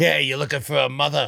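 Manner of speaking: put-on creepy lady voice. Acting out the creepy lady at concerts, imitating a creepy lady. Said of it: "That's the creepy lady".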